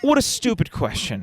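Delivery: high-pitched mock villain sneer.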